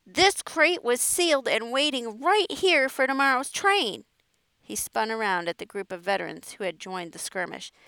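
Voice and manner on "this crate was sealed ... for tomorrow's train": high, crowing shout at the top of the voice. Finding a sealed crate broken and scattered, a man is shouting at top of voice. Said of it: "Ashburn crowed at the top of his voice".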